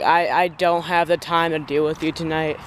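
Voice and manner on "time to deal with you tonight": ordinary talk, nothing marked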